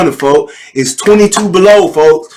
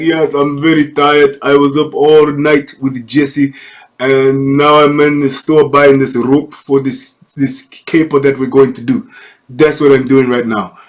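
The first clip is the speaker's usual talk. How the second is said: put-on Nigerian accent for a character; 3 semitones lower than usual. Narrating a video, voicing a yawning man in a store, put-on nigerian voice. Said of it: "And this is my Nigerian voice".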